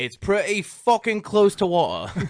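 bad Australian accent, very loud and high. Telling a joke that Australians tell about American beer: bad Australian accent. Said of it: "That wasn't a good Australian accent".

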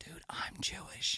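very soft, barely voiced whisper. Retelling what a bar patron said after a show: imitating someone whispering. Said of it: "You don't have to whisper that".

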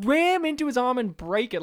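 play-acted, high, urgent yelling. Retelling own reaction while watching a movie: retelling yelling at a screen. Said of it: "I was yelling at the screen".

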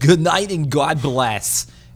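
put-on speaking with a Yiddish-style accent.

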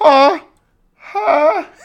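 put-on very high, loud, squeaky old-man voice. Retelling a movie scene where Batman gets hit: Batman sounding like an old man. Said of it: "He sounds like an old man".

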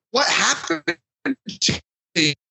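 confused dude voice. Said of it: "It's like".

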